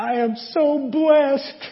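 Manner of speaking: mock sobbing through words, tearful, very high. Retelling a movie scene of a woman in tears: imitating someone crying. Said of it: "she's like crying and saying".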